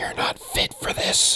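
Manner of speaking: close, breathy, hushed whisper. A figure leans down to the listener's ear in the scene, whispering into the ear. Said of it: "he whispers into your ear".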